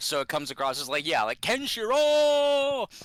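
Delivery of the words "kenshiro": high fretful wail stretching the final o. Re-doing the actor's line: imitating Malcolm McDowell's worried cry with long O. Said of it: "he elongates the O".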